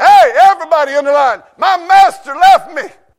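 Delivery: shouted, loud voice.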